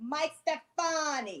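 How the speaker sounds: put-on Italian accent on the name. Saying the listener's name, mike stefani, in an italian voice. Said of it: "in my Italian voice".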